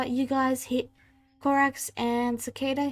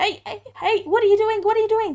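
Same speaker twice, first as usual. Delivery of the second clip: high, loud, trembling, frightened cry; 9 semitones higher, 7 dB louder than usual. Narrating a game scene where a player startles an elf, frightened, shivering elf. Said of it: "who starts shivering and pointing the sword at you and saying".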